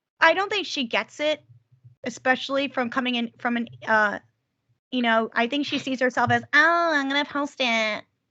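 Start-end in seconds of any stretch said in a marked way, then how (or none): 6.5-8.0 slow, lazy, drawn-out celebrity-style voice. Imitating how a poster sees herself: Kim Kardashian voice. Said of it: "that's my Kim Kardashian voice".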